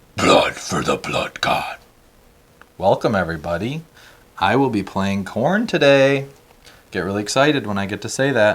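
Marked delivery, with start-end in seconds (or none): 0.2-1.8 most hellish, demon-like voice. Opening a game session, the player greets everyone in a demonic voice. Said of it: "You just went from like most demonic voice".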